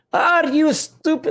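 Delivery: very high, shrill, failed Scottish accent. Joking about party votes, attempting a bad Scottish accent. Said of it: "I can't speak in a Scottish accent".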